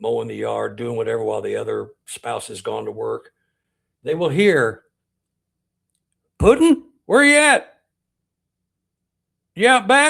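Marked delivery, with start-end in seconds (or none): 6.4-10.1 very high, very loud hollering call. Retelling a voice heard outside the house: imitating a husband calling out. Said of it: "A husband calling his wife".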